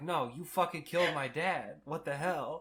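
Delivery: haughty, commanding, imperious indignant outburst. Retelling a child character's reply to a woman: imitating Caswell imperiously. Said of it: "he's, like, very imperious".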